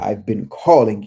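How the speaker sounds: put-on booming male voice. Retelling a voice that called out to the speaker by name, in Oshun's deep booming voice. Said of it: "It was deep voice".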